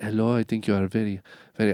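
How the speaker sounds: unsure, amateur attempt at a French accent. Retelling what a girl said when she came up at work: attempted french accent. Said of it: "I don't know how to do a French accent".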